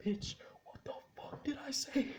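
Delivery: acted, breathy, whispered, furious angry rant. Speaker retelling the richest man's argument with a woman, retelling a man screaming angrily. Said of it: "And he's screaming".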